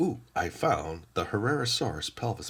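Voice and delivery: ordinary talk, nothing marked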